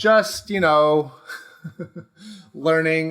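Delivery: slow words spoken through laughter. Answering why they recommitted to their Facebook group, laughing while talking. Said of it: "I know I'm laughing".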